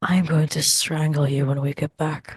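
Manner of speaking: hushed, whispering voice. Whispering a threat to a companion while clinking glasses: whispering. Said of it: "I whisper".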